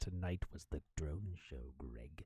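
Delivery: very low, venomous, sinister menace. Redoing a woman's line after saying it wasn't sinister enough, mock-sinister voice. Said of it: "You didn't say that with a sinister enough voice".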